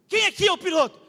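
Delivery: acted-out high, loud shout. Retelling entering and shouting to ask who the pilot is: shouted. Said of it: "eu gritei assim".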